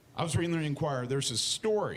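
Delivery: plain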